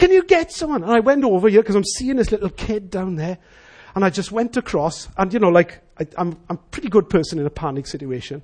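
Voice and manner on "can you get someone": put-on very high, loud scream in a child's voice. Retelling a panic situation, voicing the little kid: retelling a kid's screaming. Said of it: "And so he's screaming".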